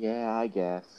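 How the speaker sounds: resigned, defeated, deflated, wind-out-of-the-sails tone. Asked by the other speaker whether to move on to the next topic, sounding defeated. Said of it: "you sound so defeated".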